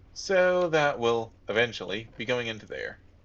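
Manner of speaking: stress on "eventually". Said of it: "Emphasis on the eventually".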